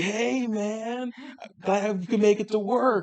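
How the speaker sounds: very high, laid-back surfer dude voice. Describing a game's new phone character, the speaker quotes him in a surfer bro dude voice. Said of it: "does his best, like, surfer bro dude voice".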